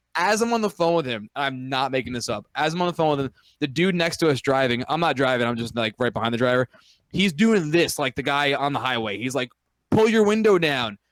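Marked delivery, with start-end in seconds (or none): 9.9-10.9 high-pitched, loud shouted yell. Retelling a man in the next car on the highway calling over, imitating someone screaming. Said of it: "And he's screaming".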